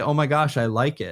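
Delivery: normal talking voice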